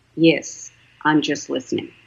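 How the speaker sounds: quiet low-pitched voice. Retelling answering a client who asks if they're still there, very low soft voice. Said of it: "in a very low, soft voice".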